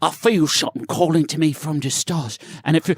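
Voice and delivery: put-on British accent. Telling friends what the character Josh SunRunner says, in Josh SunRunner British accent. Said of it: "He's got like a British accent".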